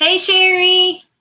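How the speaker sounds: loud, high-pitched hollering yell. Calling out a greeting to someone while working: yelling. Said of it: "I don't know why I'm yelling".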